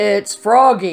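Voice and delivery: deep croaking character voice. Narrator reading a storybook, Froggy knocking at Rabbit's door, deep croaking Froggy voice. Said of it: "croaked a deep voice".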